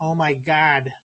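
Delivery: put-on over-the-top American accent. Describing a secondary character, quoting her in an exaggerated American accent. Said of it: "very exaggeratedly American in her accent".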